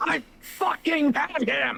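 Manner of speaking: shrill, ragged raging shout, very high and rough. A player voicing his raging character after someone took his kill, enraged outburst. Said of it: "Calm down".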